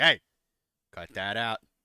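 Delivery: very loud, very robotic mechanical voice. Imagining his reaction when pelted with blueberries: very robotic voice. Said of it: "Voice very roboty".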